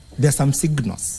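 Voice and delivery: ordinary talk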